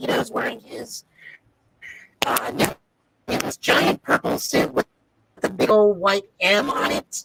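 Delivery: distorted robotic-sounding voice. Describing a costume while the audio distorts: robotic-sounding voice. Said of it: "You got the robot voice going".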